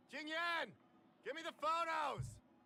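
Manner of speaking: very high, shrill shout. Calling out for someone to bring the photos: yelling. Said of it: "Stop yelling!".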